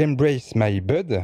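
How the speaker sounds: put-on English accent and pronunciation. Interviewer naming a photographer's exhibition title, in an english accent. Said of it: "Voilà mon plus bel accent anglais".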